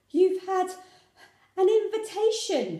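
high, loud, out-of-breath, breathless gasp. Narrator voices a mother rushing in out of breath with news; gasping, out of breath. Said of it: "she gasped".

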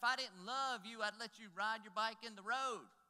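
shrill, very high, very loud screaming. Recalling a childhood argument, the speaker quotes the mother screaming back: imitating mom screaming. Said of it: "And she screamed back".

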